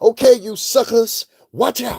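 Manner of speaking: seventies movie tough talk. Imitating a woman who talks like a seventies movie heroine: imitating seventies exploitation movie talk.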